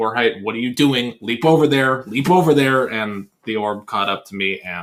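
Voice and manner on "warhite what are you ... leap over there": full-on screaming, very loud. Retelling the raid leader yelling at him during a raid, imitating someone screaming. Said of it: "the raid leader is just screaming at me".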